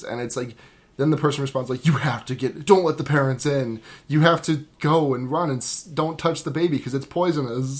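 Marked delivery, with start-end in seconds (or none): none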